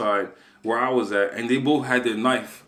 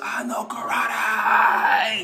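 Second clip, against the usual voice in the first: restrained, high, mild little scream; 10 semitones higher than usual. Retelling fending off attackers with knives in the street: imitating own scream. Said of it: "I just screamed at the top of my lungs".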